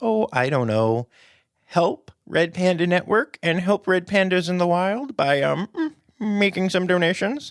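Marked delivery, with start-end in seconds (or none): 1.7-7.5 weird, odd, high, affected put-on voice. Wrapping up, asking the audience to donate to a fundraiser, in a weird put-on voice. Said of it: "I don't know why I did a weird voice there".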